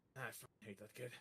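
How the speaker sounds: muttered under breath. Voicing Emily, who grunts about a kid: said quietly. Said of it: "Emily said that quietly".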